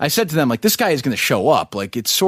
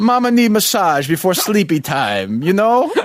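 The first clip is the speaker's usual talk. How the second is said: put-on elderly Italian man's voice, pitched up; 5 semitones higher than usual. A speaker breaks into a bit as the others react, old italian man voice. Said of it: "Why is he an old Italian?".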